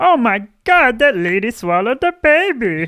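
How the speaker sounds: very high, loud, swooping squealing voice. Imitating the doctor from The Simpsons after comparing someone to him: The Simpsons doctor voice. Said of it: "the one that talks like this".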